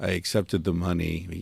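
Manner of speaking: put-on German accent. Quoting a documentary director from the film's opening: Werner Herzog accent. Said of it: "in his accent".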